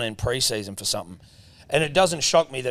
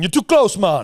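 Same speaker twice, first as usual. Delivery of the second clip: loud, high put-on Jamaican accent; 7 semitones higher, 8 dB louder than usual. Voicing a rabbit in a comedy skit, put-on Jamaican accent. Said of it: "I didn't just break into Jamaican accent".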